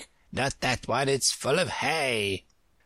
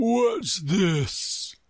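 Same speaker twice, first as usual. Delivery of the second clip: hollow voice like a tolling bell; 7 semitones higher than usual. Narrator reads the lion questioning Alice, in a deep, hollow tolling tone. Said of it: "speaking in a deep, hollow tone that sounded like the tolling of a large bell".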